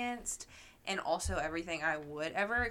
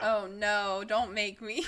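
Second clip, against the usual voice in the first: very slow, loud, drawn-out put-on sarcastic reluctance; 2 semitones higher, 6 dB louder than usual. Answering a request to say a slur, put-on sarcastic tone. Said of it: "That sounded so sarcastic".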